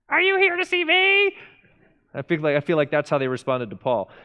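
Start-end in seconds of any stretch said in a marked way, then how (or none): 0.1-1.3 very high, squeaky, whiny cartoon voice. Imagining how Lydia answered Paul at the river: whiny cartoonish Lydia voice. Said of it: "I just hear her whiny, cartoonish voice".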